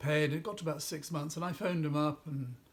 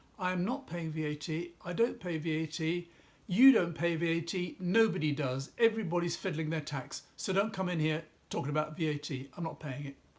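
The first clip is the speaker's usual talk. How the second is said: ordinary delivery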